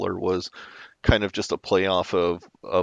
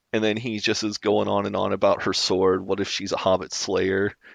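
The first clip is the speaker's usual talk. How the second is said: ordinary talk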